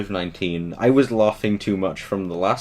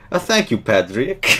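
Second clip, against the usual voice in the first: mock-cheery, happy put-on woman's voice; 4 dB louder than usual. Quoting the woman who came on in the game, imitating her cheery voice. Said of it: "the woman that came on was so cheery".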